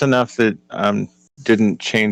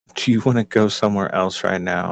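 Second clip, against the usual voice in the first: whispering, quieter; 3 dB quieter than usual. Stepping over to Kren to speak in his ear: whispering. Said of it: "whisper in his ear".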